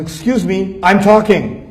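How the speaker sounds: mock angry, scolding tone. Acting out a president interrupted during his speech: imitating an angry president. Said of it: "when he got angry".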